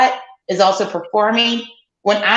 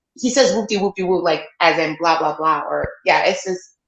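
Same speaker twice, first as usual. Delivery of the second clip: ordinary delivery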